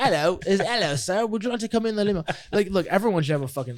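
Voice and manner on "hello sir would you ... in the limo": put-on British accent, pitched up. Speaker describing the limo driver's greeting, imitating a british accent. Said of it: "he talks in a British accent".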